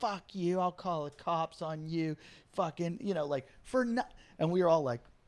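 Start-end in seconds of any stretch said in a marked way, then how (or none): 0.0-3.0 slow, drawn-out, rude, abusive half-yell. Retelling a drunk girl's rant at the comics: imitating someone yelling. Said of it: "yelling at us and going".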